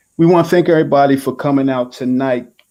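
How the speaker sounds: plain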